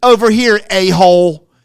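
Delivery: loud rock-star yell from the stage. Retell how a performer on stage demands a light from the guy, imitating someone yelling at a guy. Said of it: "he yells at the guy".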